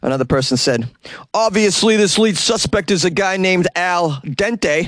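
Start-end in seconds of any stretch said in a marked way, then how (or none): 1.3-4.9 best-effort put-on New Jersey accent, raised pitch. Speaker reads out other people's joking comments, in their best Jersey accent. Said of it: "which I will read in my best Jersey accent".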